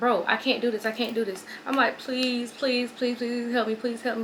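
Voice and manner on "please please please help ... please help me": ordinary talk, nothing marked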